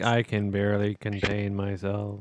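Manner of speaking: mock deadpan, apathetic delivery. Repeating another speaker's line to mock it: imitating an apathetic delivery. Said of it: "in its fully apathetic".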